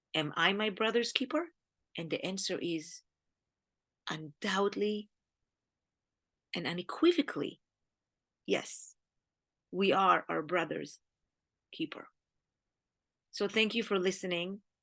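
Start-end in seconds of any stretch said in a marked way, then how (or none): 0.1-12.0 moved, choked-up speech catching and breaking mid-phrase. Speaker closing a talk to listeners, emotional. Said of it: "Sorry for being emotional a little bit".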